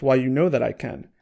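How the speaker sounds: plain reading voice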